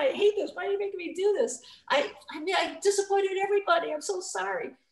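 put-on crying, high, tearful, self-pitying voice. Retelling missing a shot, quoting own words: retelling own crying. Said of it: "I started crying and I said".

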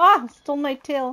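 very slow, stretched-out, drawn-out high scream. Playing a game and losing the tail: screaming. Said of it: "I don't mean to scream in your ear".

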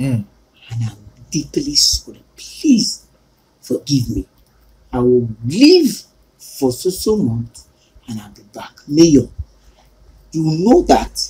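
very low, hushed, bedroom-quiet murmur. At the pulpit, speaking to the people and the mayor, in a very low voice. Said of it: "Your voice is very low".

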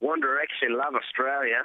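put-on Australian accent. Saying a requested line after being asked for an accent: australian accent. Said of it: "Can you do an Australian accent?".

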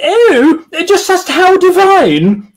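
put-on squawk, very high, very slow, every word stretched. A male narrator voices a woman character's line: Felicity Forsyth Twike squawk.

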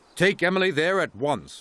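crossly. Narrator reads a character giving an order, crossly. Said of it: "ordered Sir Topham Hatt crossly".

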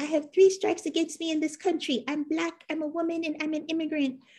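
very high, proper, ladylike mother's voice. Quoting her mother's everyday saying about three strikes: imitating her mother's voice. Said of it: "Your mom's voice".

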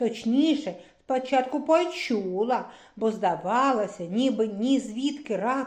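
ordinary delivery

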